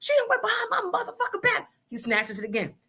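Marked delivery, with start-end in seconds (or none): 0.0-1.7 mock angry man, very high-pitched outburst. Retelling a scene, the speaker voices the man mad at her, mock-angry man. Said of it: "He's mad at her".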